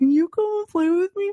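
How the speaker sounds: put-on very high little-kid voice, talking through braces. Describing a show's neighbor character, doing his little boy with braces voice. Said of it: "a little boy with braces. He's like".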